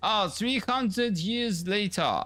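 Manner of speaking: slow, drawn-out, high put-on French accent. Joking that a line would have worked too: put-on french accent. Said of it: "in a French accent, would have worked too. ... Like that".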